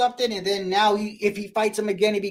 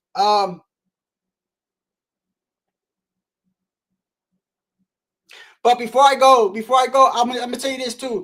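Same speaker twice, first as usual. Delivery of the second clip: hoarse, strained, worn-out voice, louder; 6 dB louder than usual. Saying goodbye after a long talk, tired: hoarse, losing voice. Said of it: "I'm losing my voice".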